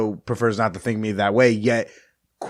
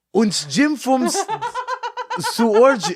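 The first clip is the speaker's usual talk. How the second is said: very high, drawn-out, fake German accent. Asked what accent that was, the speaker tries again, bad German accent. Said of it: "I can't pretend to do German".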